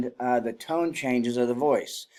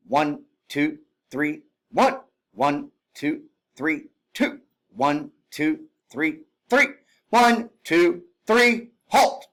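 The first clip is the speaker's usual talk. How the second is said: even, steady, loud, rhythmic drill cadence; 4 semitones higher, 5 dB louder than usual. Demonstrating how a unit counts before halting, drill-count cadence. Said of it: "So it would sound like this".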